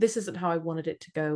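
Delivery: plain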